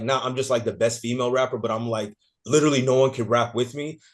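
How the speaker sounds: plain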